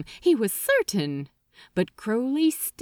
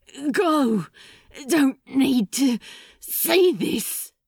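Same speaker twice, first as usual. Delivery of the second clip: slow panting, words forced through clenched teeth; 2 semitones higher than usual. Narrator reading a character's line to the angel: panting through clenched teeth. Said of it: "he panted through clenched teeth".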